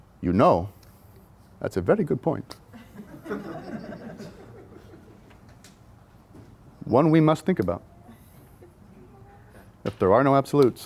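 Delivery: made-up, put-on German accent, sing-song. Retelling what a german man told the band: put-on german accent. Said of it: "I don't know what accent I'm doing".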